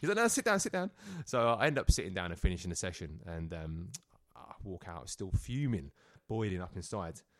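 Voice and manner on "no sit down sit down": very high-pitched, panicked voice. Retelling the therapist's reaction to a walkout: imitating a panicked therapist. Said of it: "he's panicked a little bit".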